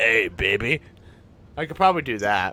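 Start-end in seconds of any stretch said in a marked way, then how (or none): 0.0-0.8 raspy, gravelly voice, lower and quieter. Recreating a remembered soundbite for the other speaker; raspy, deep voice. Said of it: "Kind of raspy and deep".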